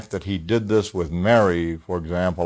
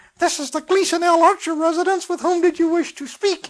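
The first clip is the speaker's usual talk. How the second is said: put-on tiny, very high, squeaky little child's voice. Recalling a friend's child answering the phone, in a little squeaky child voice. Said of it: "hearing this little squeaky voice saying".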